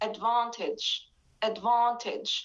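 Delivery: British accent, British pronunciation of "advantage". Showing how british speakers say the word: british pronunciation of advantage. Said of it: "but in British accent, they say".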